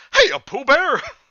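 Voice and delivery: very high, very loud, happy-go-lucky voice. Reading a story aloud, voicing Tigger greeting Pooh: happy-go-lucky Tigger voice. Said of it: "Tigger said in his normal happy-go-lucky voice".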